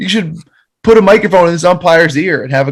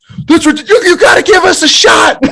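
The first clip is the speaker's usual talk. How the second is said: mock very high-pitched, mild screaming rant; 13 semitones higher than usual. Acting out a man who came out throwing his hands at the umpire, imitating someone screaming. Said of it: "He's like screaming at him".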